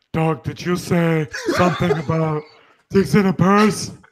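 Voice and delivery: put-on man voice. Asking another speaker about something they said: put-on man voice. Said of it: "With her man voice".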